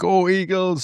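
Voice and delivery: high-pitched, cheering call, called out.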